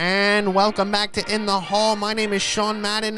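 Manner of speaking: put-on, odd, old-fashioned 1940s way of speaking. Showing how everyone sounded in the nineteen forties: imitating 1940s weird accent. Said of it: "Everyone sounded like this in the nineteen forties".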